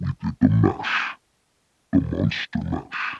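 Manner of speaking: breathy, whispered monster voice. Speaker demonstrates a series of voices, now the monster voice. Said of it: "This is the monster voice".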